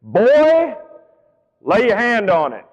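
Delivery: acted, aggressive, sarcastic, slow and swooping delivery. Retelling the exact words a father said to his son: imitating an aggressive, sarcastic order. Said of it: "he said it aggressively and a bit sarcastically".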